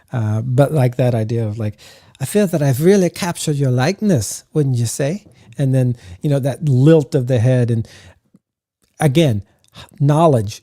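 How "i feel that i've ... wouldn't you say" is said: put-on, guessed-at French accent. Describing a character's voice, speaker voices her line in put-on french accent. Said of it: "I give her like this almost a, a French accent".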